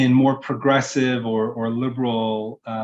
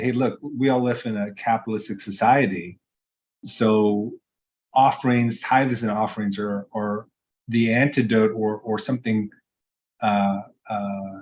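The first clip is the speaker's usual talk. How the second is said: ordinary talk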